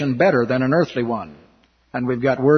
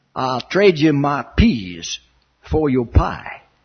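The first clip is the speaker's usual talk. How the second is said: slow, slight, light Southern drawl. Retelling a man in the chow line offering the kids a trade, slight Southern accent. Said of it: "Talks a little bit like a southerner".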